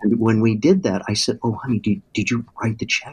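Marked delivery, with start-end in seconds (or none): 1.4-3.1 quiet, soft, hushed whisper. Retelling asking his wife at church about the check: retelling a whisper. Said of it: "I was whispering to her".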